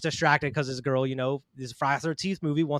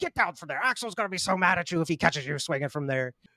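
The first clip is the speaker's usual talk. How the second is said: mock annoyed, pissed-off voice. Imitating an annoyed character telling another to get down: imitating someone pissed off. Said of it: "The other dude's just pissed off".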